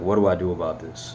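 plain

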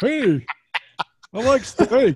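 put-on high-pitched Florida accent. Demonstrating the accent the group calls Scott's: Scott's Tampa accent. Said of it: "That's the Scott Tampa accent".

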